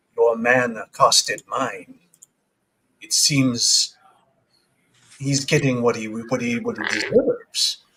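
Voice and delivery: hushed, under-the-breath half-whisper. A game narrator voices a woman behind a curtain addressing the players, low half-whispering voice. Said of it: "you hear a sort of low whispering voice".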